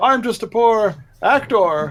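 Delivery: put-on indignant shouting. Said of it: "I'm shouting things like".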